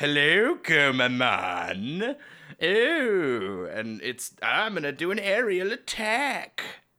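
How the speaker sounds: high, half-British voice, "ooh" drawn out. Speaker mocks how Horse RoboCop talks, Horse RoboCop's half-British voice. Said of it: "It's like halfway towards British".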